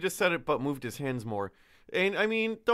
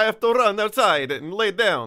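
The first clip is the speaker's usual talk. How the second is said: put-on Italian accent, higher and louder; 6 semitones higher, 9 dB louder than usual. Imagining a guard's thoughts in a fake Italian accent. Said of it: "You're not allowed to do fake Italian accents anymore".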